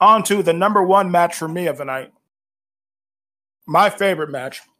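speaking through a mouthful of food. Introducing the night's favorite match, with a mouthful of chicken. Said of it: "Excuse the mouthful of chicken".

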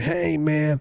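nasal stoner burnout voice from the back of the throat. Showing how a burnout guy talks: imitating a burnout guy voice. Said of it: "him doing a video of it, of a burnout".

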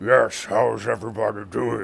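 orc character voice, as if talking round tusks. Showing off the orc voice used in their game, orc voice with big tusks. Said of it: "you've heard my orc voice before, and it's my voice of, if you have big tusks".

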